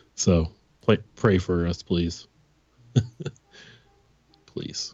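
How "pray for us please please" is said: nervous laughing, lower and quieter. Asking listeners to pray for them: nervous laughter while talking. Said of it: "I'm laughing 'cause it's nervous laughter".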